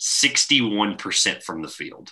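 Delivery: very slow, deliberate, each word spelled out separately. Discussing the NBA finals with another speaker: said very slowly. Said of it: "I'm going to say this slowly".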